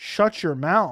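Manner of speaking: ordinary talk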